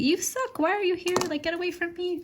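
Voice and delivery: very high, squeaky put-on pet voice. Voicing their pet who only tolerates sitting on laps, in a fake voice. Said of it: "We give her like a fake voice".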